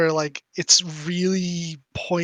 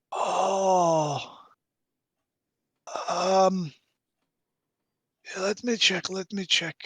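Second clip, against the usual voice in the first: put-on old man voice, slow, with drawn-out "oh"; 2 semitones higher, 3 dB quieter than usual. Voicing a really old Barovian man who answers his son: really old Barovian man voice. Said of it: "a really old Barovian dude".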